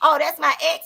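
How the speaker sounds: normal talking voice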